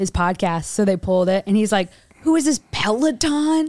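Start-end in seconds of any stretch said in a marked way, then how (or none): 2.2-3.7 put-on upset voice, higher pitched. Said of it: "He gets so upset".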